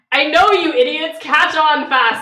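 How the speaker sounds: very loud, shrill, high-pitched yell. Voicing her character as she yells at the others, yelling. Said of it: "She's gonna yell".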